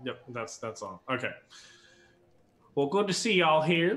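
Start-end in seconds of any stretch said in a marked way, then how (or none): 2.7-4.0 put-on high, raised Southern woman's accent.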